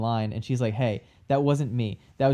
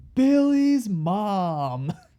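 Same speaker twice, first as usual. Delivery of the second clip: very high top-of-lungs yell, "mom" stretched out; 9 semitones higher, 4 dB louder than usual. Recalling the second-killer reveal scene, imitating Mickey Rourke shouting. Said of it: "looks up to the ceiling and shouts".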